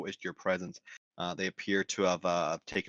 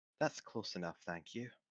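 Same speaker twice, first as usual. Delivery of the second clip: half-whispered, feminine and very quiet; 9 dB quieter than usual. Running a tabletop game, the game master voices her as the player approaches: feminine half-whisper. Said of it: "this feminine voice whispers back to you".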